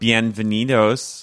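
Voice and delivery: put-on Chicago accent. Imitating how Jess said a greeting on the show: Chicago accent. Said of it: "in the most, like, Chicago way".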